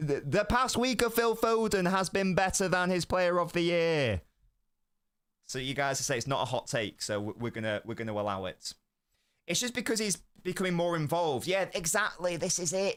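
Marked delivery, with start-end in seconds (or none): 0.0-4.2 loud shouting voice, higher pitch. Stating an opinion about a player openly after whispering: shouting. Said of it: "I'm gonna shout it".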